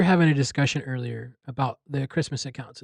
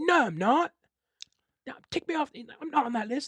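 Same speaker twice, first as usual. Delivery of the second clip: put-on very high-pitched, panicked, frantic child voice, pleading; 12 semitones higher than usual. Retelling a video of a British kid told he's on the naughty list, imitating a kid freaking out. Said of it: "Like just like freaking out".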